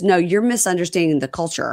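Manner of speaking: plain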